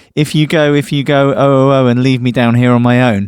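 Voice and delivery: ordinary talk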